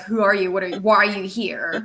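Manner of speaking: ordinary delivery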